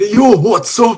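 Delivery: very high put-on Newcastle accent. A new caller greets the show's hosts, in a Geordie accent. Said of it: "It's a Geordie".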